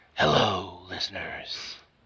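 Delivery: strained, put-on, heroic superhero voice pushed from throat. Podcast co-host greets the listeners in his Batman voice. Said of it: "Don't expect me to do the voice all the time. It hurts the throat".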